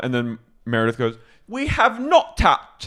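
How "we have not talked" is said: put-on very high, drawn-out slow British accent. Retelling what a cast member said to another: imitating Meredith's British accent. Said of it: "She goes back into a British accent".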